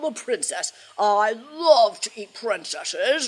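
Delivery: menacing dragon growl.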